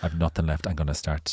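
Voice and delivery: ordinary talk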